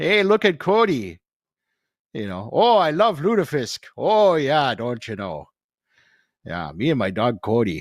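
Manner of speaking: put-on Minnesota accent with long drawn-out vowels. Imitating a younger brother who lives in Minnesota, Minnesota accent with drawn-out vowels. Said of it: "you've got to draw out the vowels".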